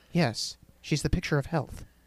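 hushed, ominous whisper full of foreboding. Recapping a story, acting out the detective's line, mock-ominous. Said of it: "he very ominously says".

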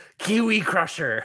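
yelling kept small and held back. Acting out an imagined wrestling moment, imitating someone yelling. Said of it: "And then Shivani yells".

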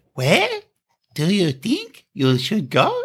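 put-on grown man's bizarrely high, climbing little kid voice. Retelling what a man said to another couple: imitating a bizarrely high voice. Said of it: "Why the fuck is his voice so high?".

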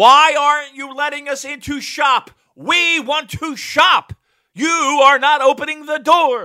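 drawn-out screaming, very loud and very high-pitched. Describing a YouTube video of a guy banging on a store door: retelling a man screaming. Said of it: "He's just screaming".

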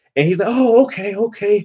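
usual speaking voice

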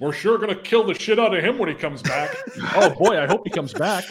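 mock pointed aside. Mocking what the others say about Gabe coming back: imitating saying it loudly. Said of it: "And then like loudly".

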